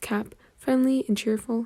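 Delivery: ordinary delivery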